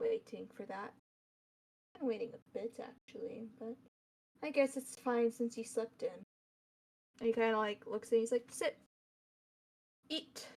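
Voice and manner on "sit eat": huffy irritated tone, quieter. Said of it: "huffy voice".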